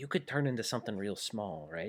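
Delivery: hushed, breathy half-whisper under the breath. In a game, turning to a fellow character to ask something: half-whispering. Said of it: "I kind of whisper and say".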